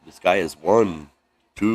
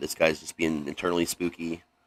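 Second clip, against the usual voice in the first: ordinary talk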